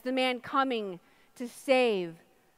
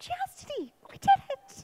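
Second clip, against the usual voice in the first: play-acted, giddy, over-the-moon, exuberant triumphant exclamation. [name] retells a moment with her fiancé, reenacting her exuberant cry. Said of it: "really exuberant".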